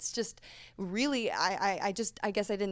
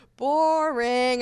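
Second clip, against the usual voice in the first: mock sarcastic voice, higher and louder; 5 semitones higher, 10 dB louder than usual. Retelling her reply to repetitive online comments: imitating her own sarcastic reply. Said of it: "I respond very sarcastically".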